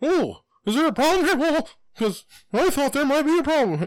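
very high, loud, squeaky, sing-song voice. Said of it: "and he's like".

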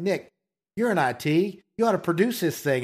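mock playful, teasing tone. Retelling what a podcaster said to him, retelling a joking remark. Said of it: "he turned to me jokingly".

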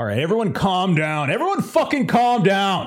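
high, rising, escalating shout. Voicing an armed character telling everyone to calm down: yelling. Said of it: "You're the one who's yelling".

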